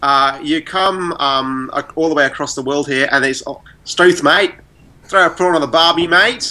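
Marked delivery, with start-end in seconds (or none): 3.8-6.5 pitched-up, stock Australian accent. Showing what English sounds like across the world: Australian accent. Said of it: "that's an Australian accent for you".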